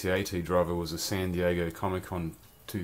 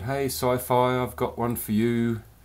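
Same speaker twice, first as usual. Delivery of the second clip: put-on English accent, higher, louder, slower; 5 semitones higher, 5 dB louder than usual. Retelling how the comic store owner greeted the speaker: imitating Dee's English accent. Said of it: "in her lovely little English accent".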